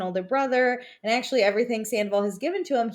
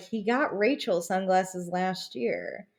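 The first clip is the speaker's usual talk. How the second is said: hushed, half-whispered stage whisper; 3 semitones lower, 4 dB quieter than usual. Retelling what Allie half-whispered to James, retelling a half-whisper. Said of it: "like whispers".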